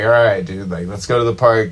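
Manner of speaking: ordinary talk, nothing marked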